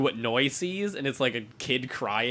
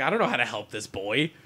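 ordinary delivery

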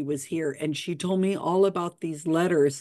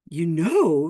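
said with a gasp, louder; 4 dB louder than usual. A woman learns the narrator knows why she came, gasping. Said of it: "she gasped".

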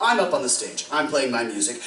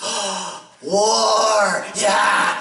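mock, excited, high troll voice, "war" drawn out; 5 semitones higher, 4 dB louder than usual. Telling a story, acting out the troll's eager reply: acting out an excited troll. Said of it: "immediately he gets all excited and starts drooling".

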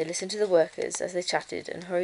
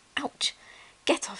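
growling, fed-up, grumbling delivery; 8 semitones higher than usual. Narrator reads Ruby the bear, picked up by her ear, growled. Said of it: "she growled".

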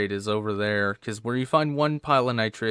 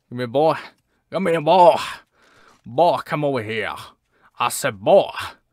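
loud, cartoon-style rooster call; 4 semitones higher, 7 dB louder than usual. Calling to an animal while playing a hunting game, Foghorn Leghorn impression. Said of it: "Do my best foghorn leghorn".

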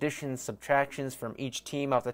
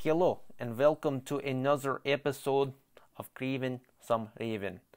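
put-on Russian accent drifting Scottish, quieter, slower; 5 dB quieter than usual. Host welcoming listeners to another episode, in a Russian accent drifting Scottish. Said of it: "I don't know what that accent was. It kind of started out Russian, ended up a little Scottish".

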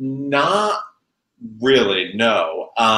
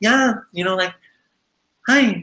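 put-on high-pitched, unbroken, pre-puberty teenage voice; 9 semitones higher than usual. Recalling being a teenager who hit puberty late: own pre-puberty teen voice. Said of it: "I hit puberty super late and I was just like".

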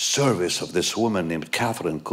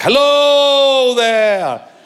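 showy, very high, very loud, "hello" stretched out; 13 dB louder than usual. Retelling how Catherine talked in person: imitating Catherine's dramatic voice. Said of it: "she talked really like".

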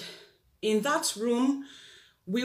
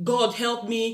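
imitated woman crying out. Recounting what a woman shouted, the speaker is imitating a woman crying out. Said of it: "at first she was crying".

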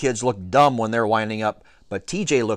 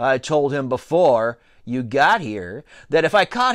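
plain

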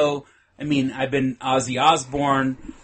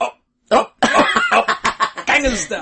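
put-on stuttering voice, higher-pitched and louder; 9 semitones higher, 5 dB louder than usual. Retelling a South Park Halloween party scene: stuttering Jimmy impression. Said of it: "he kinda speaks with a stutter, so he goes".

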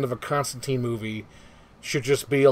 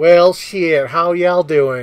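loud, drawn-out delivery; 3 semitones higher, 7 dB louder than usual. Describing an Instagram star, imitating Leslie Jordan. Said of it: "He's like this".

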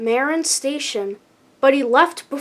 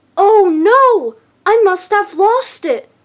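little, high, shocked, startled peep; 7 semitones higher, 7 dB louder than usual. Emily answers Thomas after he points out her empty flatbeds, peeping in shock. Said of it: "Emily peeped in shock".

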